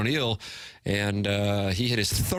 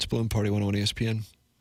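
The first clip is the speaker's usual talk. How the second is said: normal talking voice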